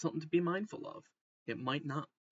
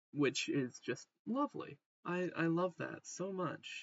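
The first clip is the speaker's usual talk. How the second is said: openly sarcastic, meaning the opposite; 3 semitones higher than usual. Giving a weather forecast of below-zero temperatures, sarcastic. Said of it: "that's sarcasm".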